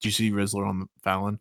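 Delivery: put-on grave, low, hushed, dead-serious solemn tone. Retelling what the listener abruptly asked off-topic, in a mock-solemn tone. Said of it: "in the most solemn tone".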